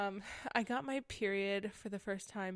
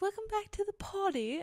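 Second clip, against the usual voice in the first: clumsy, bad, pitched-up put-on Australian accent; 11 semitones higher than usual. Retelling how Australians open their podcasts, imitating an Australian accent. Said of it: "that didn't even sound Australian".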